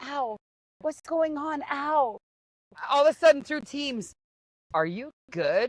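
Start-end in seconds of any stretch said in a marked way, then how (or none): 0.0-2.2 hushed, slow, stifled, pained ow. Retelling being stuck in a garbage can at a call center, retelling a hushed ow. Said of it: "I have to be quiet".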